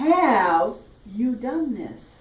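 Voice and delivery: stressed HAVE, held long and slow.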